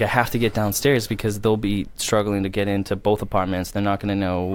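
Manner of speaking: ordinary delivery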